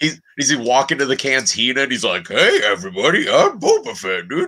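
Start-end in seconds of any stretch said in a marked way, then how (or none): 2.3-4.5 silly put-on voice, high and swooping. Acting out an imposter entering a cantina: stupid impression of an imposter. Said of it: "a stupid impression".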